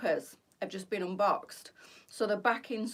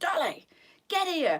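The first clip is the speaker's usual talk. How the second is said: acted-out, high-pitched, loud shout; 8 semitones higher, 5 dB louder than usual. Retelling calling her disobedient dog back: retelling a shout. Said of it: "And I'm shouting".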